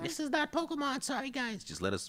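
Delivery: squeaky, hushed, very high, soft put-on voice. On stream, the speaker mimics what viewers will say, in a high voice. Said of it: "my voice ever go high like that".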